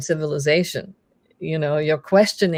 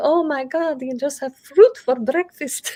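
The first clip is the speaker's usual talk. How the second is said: thrilled, excited, very high gushing exclamation; 10 semitones higher than usual. Retelling a mother's words about a diet: imitating someone excited. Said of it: "she was all excited, like".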